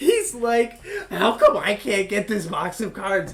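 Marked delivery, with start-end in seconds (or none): 1.1-3.3 acted furious outburst, loud, high and livid. Retelling a customer's complaint at a card store: imitating a livid customer. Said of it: "He's fucking livid".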